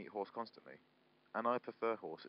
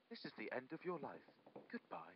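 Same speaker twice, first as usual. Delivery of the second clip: quieter demonic automated voice; 6 semitones higher, 9 dB quieter than usual. Imitating a shop's automated phone line: satanic Tesco's automated voice. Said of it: "It sounded like it was just like a satanic voice".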